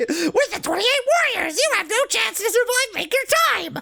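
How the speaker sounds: tiny, high, squeaky voice. Reading a game character's line aloud: Mickey Mouse voice. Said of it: "It's Mickey Mouse".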